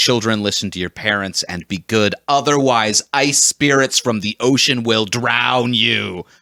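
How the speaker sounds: ordinary talk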